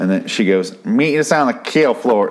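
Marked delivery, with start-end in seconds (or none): 0.8-2.3 high, irritating woman's voice. Speaker retells what a redhead said, imitating her really irritating voice. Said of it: "really irritating voice of the redhead".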